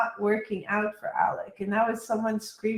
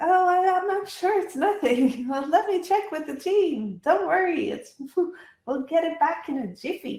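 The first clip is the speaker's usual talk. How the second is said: forced, chipper, trying-too-hard salesman patter, pitched up; 7 semitones higher, 3 dB louder than usual. Retelling a salesman reassuring an angry customer: imitating a forced chipper salesman. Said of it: "who is trying to be chipper".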